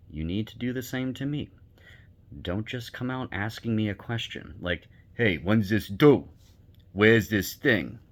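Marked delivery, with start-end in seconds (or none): 5.1-7.8 loud, rough, gruff put-on Italian accent. Showing how not to ask someone questions: gruff Italian voice. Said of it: "that's that's my gruff Italian voice that I use".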